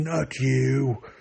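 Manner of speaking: loud rage-filled yell. Speaker praises a game character's voice and quotes her, imitating Mother Anasea's furious shout. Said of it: "the way she shouts".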